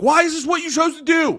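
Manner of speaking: very high, loud yelling. Showing what gets yelled at other drivers: imitating yelling at drivers. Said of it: "I love yelling stuff like".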